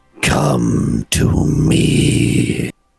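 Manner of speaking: dark, foreboding voice. Narrating a jungle scene, a voice calls out to the listener, dark and foreboding. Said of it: "the source goes from beautiful and ethereal to dark and foreboding".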